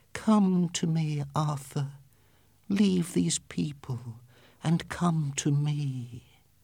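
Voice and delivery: sweet, honeyed, luring calling voice. Reading a story where she calls to him: sweet voice. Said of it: "called to him in a sweet voice".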